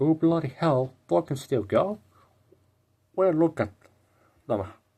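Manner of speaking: put-on clumsy British accent. Acting out how everyone reacted to a release, in a British accent. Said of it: "There's your British accent in the video".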